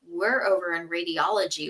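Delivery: ordinary talk, nothing marked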